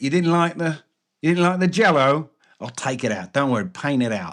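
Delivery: put-on Cockney character accent. Describing a comedy sketch, quoting the painter character: imitating a Cockney accent. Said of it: "And he's like this Cockney".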